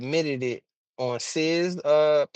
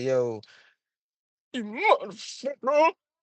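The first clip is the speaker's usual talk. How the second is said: crackling put-on voice, higher; 7 semitones higher than usual. Imitating how TJ sometimes does his voice: imitating TJ's crackling voice. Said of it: "it's like it's crackling".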